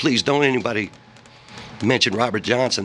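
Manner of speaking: usual speaking voice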